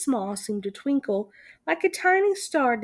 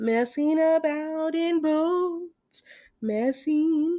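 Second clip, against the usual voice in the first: dreamy, musing, drifting, drawing out "boats"; 4 semitones higher than usual. A narrator reads the Rat's words as he goes on, dreamily. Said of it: "he went on dreamily".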